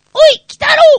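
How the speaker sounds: throat-closed falsetto, very high and very loud. Demonstrating a voice technique after closing the throat, in tight-throated falsetto. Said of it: "そのまま裏声で喋りますと".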